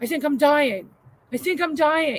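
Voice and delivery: screaming out in fright, pitched high. Telling how her husband jumped up at four in the morning, retelling a scream. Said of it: "He jumps up and starts screaming".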